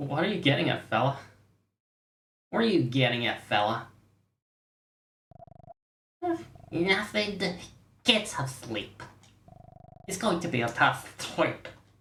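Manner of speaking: irritating, grating put-on voice. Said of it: "I'm gonna make his voice as irritating as I can".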